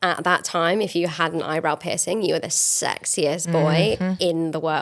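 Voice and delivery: ordinary delivery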